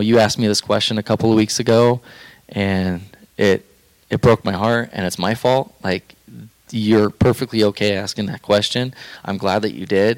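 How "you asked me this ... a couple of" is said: ordinary delivery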